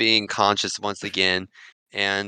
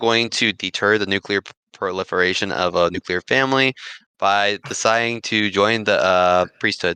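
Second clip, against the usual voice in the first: plain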